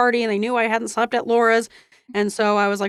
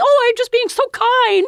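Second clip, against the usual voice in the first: put-on sugary mother voice, very high-pitched; 13 semitones higher, 5 dB louder than usual. Telling about the mom's breakfast visit, the speaker does a put-on mom voice. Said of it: "that's not how my mom talks".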